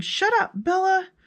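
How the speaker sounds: piercing, shrill, very high yell. Retelling how a nephew yelled at the dog: imitating someone yelling. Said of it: "my nephew was yelling".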